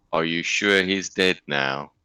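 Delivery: bone-dry, understated, deadpan delivery. Voicing a usually quiet character asking whether someone is dead: dry delivery. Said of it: "dryly says".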